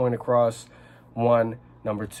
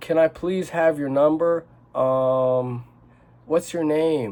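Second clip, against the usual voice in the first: pitch climbing upward, lilting rising tone; 4 semitones higher than usual. Explaining how guys ask a woman for her number, pitch rising through the sentence. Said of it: "gets higher pitched as the uh".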